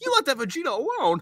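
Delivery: very high, soft, hushed anime cartoon voice. Attempting a Goku impression that comes out as a Krillin voice. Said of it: "I was trying to do Goku and I did Krillin".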